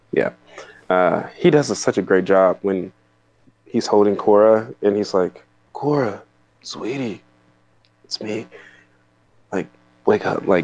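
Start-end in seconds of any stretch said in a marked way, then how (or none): 5.8-10.5 soft, mock-tearful, choked-up lump-in-throat voice. Quoting an actor holding his daughter cora, imitating a lump-in-throat voice. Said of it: "putting a lump in his throat voice".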